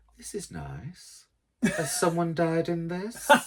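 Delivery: high, swooping, sing-song comic woman's voice. Joking about being down at the charity shop, doing an impression of the Little Britain woman. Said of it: "doing that impression of the woman off Little Britain".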